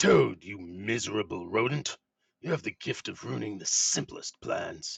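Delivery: loud, harsh, hoarse rasping voice. Voicing a villain scolding another character for ruining the plans, hoarse, raspy voice. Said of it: "His hoarse voice rasps from behind the grotesque covering".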